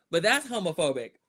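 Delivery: ordinary talk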